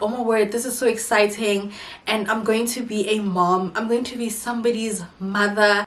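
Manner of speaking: ordinary talk, nothing marked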